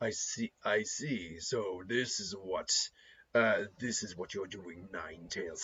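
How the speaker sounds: put-on very quiet, deep, gruff elderly character voice. Trying out a character voice addressing Nine Tails, deep gruff old voice. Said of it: "more gruff with the age".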